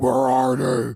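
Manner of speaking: fake raspy smoker voice. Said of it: "he's talking like this".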